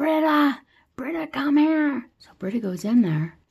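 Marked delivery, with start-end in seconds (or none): 0.0-2.1 put-on shrill yell, pitched way up, urgent. Retelling a film scene where a character yells for Britta: imitating someone yelling. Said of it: "And he's yelling".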